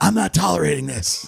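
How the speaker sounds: raspy, guttural, rough voice growled from the throat. Retelling answers at a press conference: Lori Lightfoot impression, raspy guttural voice. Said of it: "raspy, guttural voice".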